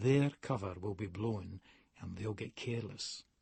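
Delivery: speaking low. Narrator pulls his man to the wash basins as someone enters, lowered voice. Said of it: "lower my voice".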